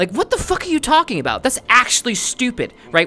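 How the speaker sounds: fired-up, passionate, intense, high, swooping delivery. Showing how passionate speech gets mistaken for yelling: intense, fired-up delivery. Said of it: "with that kind of intensity".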